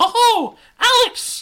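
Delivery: put-on very high, very loud girl voice, called out. Narrating a story, a young girl calls out to Alex; Mickey Mouse voice for girl. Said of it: "It's a young girl's voice".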